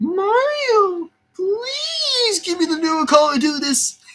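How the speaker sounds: very high, slow, drawn-out character voice.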